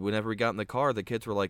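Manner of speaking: normal talking voice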